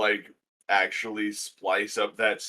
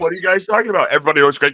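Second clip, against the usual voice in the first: mock defensive tone, louder; 8 semitones higher, 12 dB louder than usual. Repeating what someone said about Craig, mock-defensive. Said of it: "It sounded like he got really defensive".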